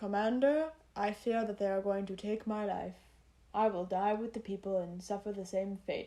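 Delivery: flat, emotionless, expressionless monotone delivery. Mocking a dubbed line's delivery, done in flat monotone, expressionless. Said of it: "what the fuck was up with that monotone, expressionless bullshit?".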